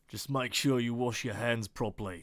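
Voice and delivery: put-on Australian accent throughout. Repeating a script line to check the accent: Australian accent. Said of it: "Do Australians say that?".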